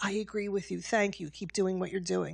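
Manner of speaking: imitated whispering. Quoting professors and students afraid to speak up, imitating a whisper. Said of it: "so they whisper and say".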